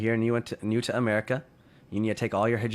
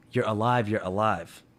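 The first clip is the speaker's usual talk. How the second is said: mock-tearful, crying voice. Retelling a father meeting his family after a flight; imitating a father crying. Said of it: "he's in tears and he's crying".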